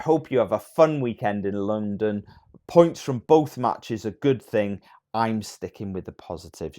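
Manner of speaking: plain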